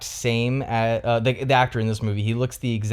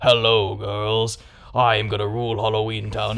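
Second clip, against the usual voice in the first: throaty, deep, guttural, full-throttle delivery. Imitating how a performer greets his girls in every scene: deep guttural voice. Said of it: "he has this like deep guttural voice".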